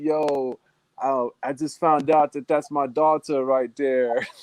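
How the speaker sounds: giddy chatter with laughs running through it. Retelling what a man said when he came back to the conversation: imitating giddy laughing talk. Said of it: "he's all laughing".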